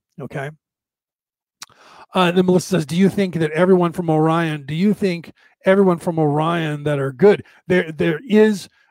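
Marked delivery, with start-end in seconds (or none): none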